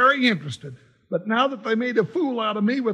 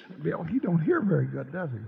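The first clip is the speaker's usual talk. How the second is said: very low, quiet, mumbled muttered aside; 7 semitones lower, 6 dB quieter than usual. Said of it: "Stop mumbling".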